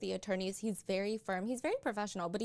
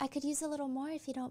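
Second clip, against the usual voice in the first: sweet, accommodating, eager-to-please, pitched-up delivery; 5 semitones higher than usual. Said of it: "his voice is slightly raspy, but his tone is".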